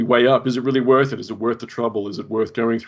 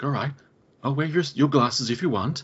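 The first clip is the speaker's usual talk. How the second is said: put-on lady voice, pitched higher; 4 semitones higher than usual. Recapping a scene, voicing a woman placating a man: put-on lady voice. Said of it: "I love your lady voice".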